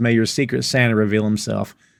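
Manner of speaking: ordinary talk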